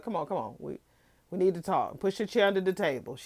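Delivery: mock bossy, spat-out delivery. Retelling how a woman ordered his friend around, mimicking bossy commands. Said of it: "spitting out all these commands and demands".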